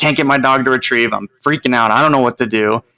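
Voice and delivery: put-on panicked voice, acted panic. Retelling a phone call to a man about to enter a field trial: retelling own panic. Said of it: "And I was like panicking".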